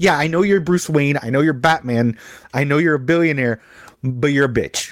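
put-on sarcastic voice. Describing a favorite movie Alfred's line to Batman: imitating sarcastic Alfred. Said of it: "you give me the super sarcastic".

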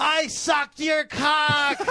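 mock hostile, very high, slow, drawn-out aggressive shout. Retelling a passenger yelling at him from a passing car, retelling an aggressive shout. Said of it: "shouted, like, very aggressively at me".

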